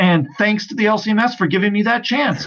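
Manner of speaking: said with obvious, dry sarcasm. Talking about hopes of being a national speaker for youth: sarcastic. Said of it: "sarcastically said".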